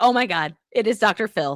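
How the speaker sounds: normal talking voice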